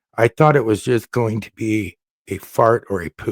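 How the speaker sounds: plain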